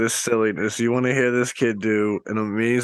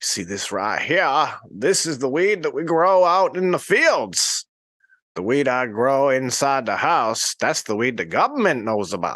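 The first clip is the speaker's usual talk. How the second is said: put-on old man voice with Maine accent; 2 semitones higher than usual. Retelling what an old man from Maine said when he gave him weed. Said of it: "what an old man from Maine would sound like".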